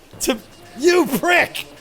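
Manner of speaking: furious yelling, loud and high.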